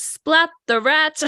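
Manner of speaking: acted, very high-pitched, ominous shout. Speaker recapping a scene where Skinner watches a conversation, retelling an ominous shout. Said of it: "ominously shouting".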